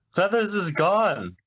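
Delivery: very high, all-out, full-volume yell. Announcing in character that the phoenix is gone: shouting as loud as possible. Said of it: "I yell as loud as I can".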